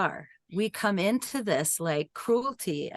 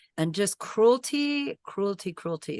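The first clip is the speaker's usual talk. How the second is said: ordinary delivery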